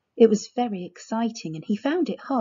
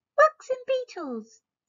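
tiny, squeaky, very high voice. Reading the story aloud, the narrator voices a hidden speaker: squeaky voice. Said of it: "said a squeaky voice".

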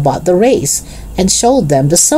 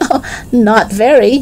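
speaking through laughter; 7 semitones higher than usual. Narrator reads a character's answer to a boy's question, laughing. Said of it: "said Henry, laughing".

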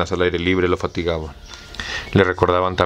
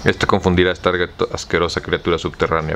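ordinary delivery, nothing marked

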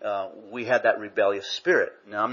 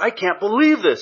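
very high, shrill, screamed-out outburst; 11 semitones higher, 6 dB louder than usual. Retelling how a man on the phone at work reacted: retelling a scream. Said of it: "He screams it out".

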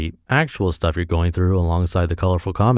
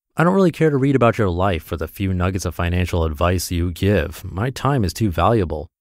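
normal talking voice

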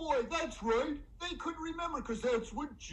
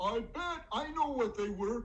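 plain reading voice

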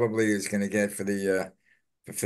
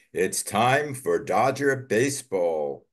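put-on slow, drawn-out, old-time ballpark announcer voice. Quoting an old announcer: imitating Vin Scully. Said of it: "quote a old announcer".

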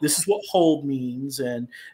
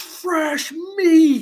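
shrill, very high screaming yell; 7 dB louder than usual. Retelling how a goblin with a hammer screamed at them: imitating a scream. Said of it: "And he screams at me".

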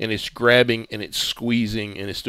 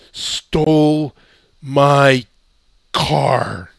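loud, thick slurring, words run together; 4 semitones higher, 8 dB louder than usual. Game master voicing Langley, very slurred speech. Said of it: "but very slurred language".

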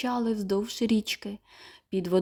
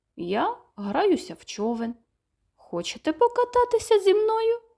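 innocent, guileless, artless, pitched-up delivery; 8 semitones higher than usual. A panda in the water answers the scared mice, innocent. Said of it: "невинно відповів Фелікс".

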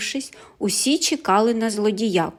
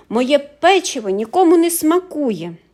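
cross, irritated, loud, high-pitched exclamation; 5 semitones higher, 5 dB louder than usual. Reading baker Pundyk just after he is exposed, irritated exclamation. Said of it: "роздратовано вигукнув".

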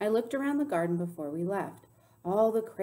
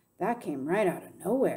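ordinary delivery

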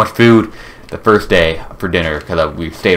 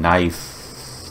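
sarcastic "nice", quieter; 9 dB quieter than usual. Playing a game and not getting a seed, sarcastic. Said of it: "I'm being sarcastic".

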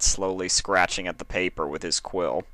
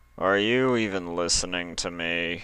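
slow, dull monotone drawl, faint hint of annoyance. Narrator reads a man asking a distracted girl whether she is listening, dull drawled monotone. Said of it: "drawled out each syllable in a dull monotone".

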